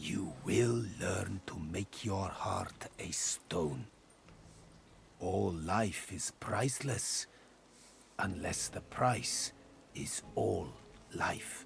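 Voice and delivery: harsh, rasping stage whisper. Narrator reads a character who steps forward and speaks in a harsh whisper. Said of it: "lowers his voice to a harsh whisper".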